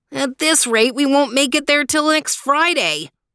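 complaining, petulant whine, high and whiny. Reading a story aloud, the narrator voices Theo, whining.

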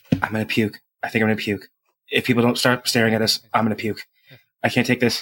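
hushed whisper. A character in a role-play turns to Toby: whispering. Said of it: "turn to Toby and just whisper".

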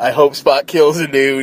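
usual speaking voice

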